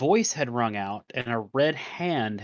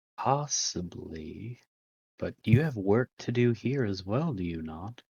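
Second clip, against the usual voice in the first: slow, drawn-out, sultry, seductive woman's voice; 3 semitones lower than usual. Voicing a woman questioning a player character about work: sexy lady voice. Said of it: "that's your best sexy lady voice".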